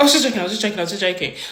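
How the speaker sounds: flustered, spluttering, with repeated words. Retelling a stranger backpedalling after an insult: imitating someone spluttering. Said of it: "he just starts to splutter".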